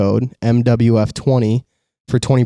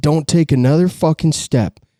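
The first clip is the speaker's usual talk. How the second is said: mock cranky, crabby old man voice, angry; 4 semitones higher than usual. Retelling what an angry farmer said at his front door: imitating an angry farmer. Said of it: "just an angry old crabby farmer".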